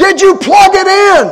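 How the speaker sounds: shrill, very loud, high, friendly holler. The speaker retells a woman yelling back from upstairs, retelling a kind yell. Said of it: "she yells back at me kindly".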